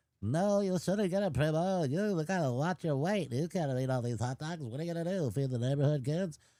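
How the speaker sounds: silly, high, put-on talking hot dog voice. Voicing a hot dog speaking to another hot dog, Primo, in a hot dog voice. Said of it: "That's your hot dog voice?".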